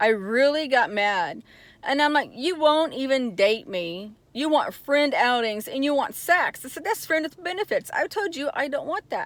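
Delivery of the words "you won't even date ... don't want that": normal talking voice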